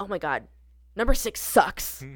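loud mock whisper. Recalling grandma at a volleyball game after a teammate messed up, imitating a loud attempted whisper. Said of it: "try and whisper, but say very loudly".

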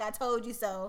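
normal talking voice

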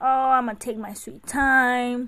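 put-on lazy, chill child voice, slow. Imitating a child who is lazy slow: imitating a lazy chill child. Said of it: "He is more chill".

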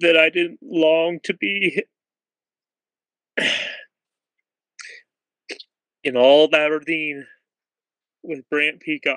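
voice choked up, emotion catching in throat. Speaker reminiscing to the person they longed to be with, choked up. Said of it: "I'm getting choked up".

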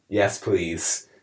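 put-on demonic voice. Acting out Bob's reply in a made-up theory: Antichrist type manner. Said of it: "in a sort of, like, Antichrist type manner".

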